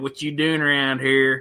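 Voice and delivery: broad, full-blown put-on rural Southern accent. Showing the voices they do, the full-blown redneck one: redneck accent. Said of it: "the full blown just redneck".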